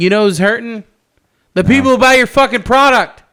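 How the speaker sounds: heated, passionate yell, high and very loud. Complaining to another speaker about companies: passionate yelling. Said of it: "I didn't mean to yell".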